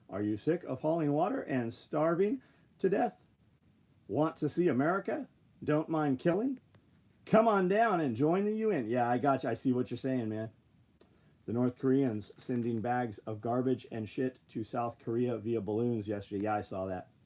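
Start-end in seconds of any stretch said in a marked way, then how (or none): 0.1-8.8 radio ad announcer voice, pitched up. Speaker launches into a mock advert in a radio announcer voice. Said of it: "Radio voice".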